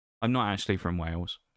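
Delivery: ordinary delivery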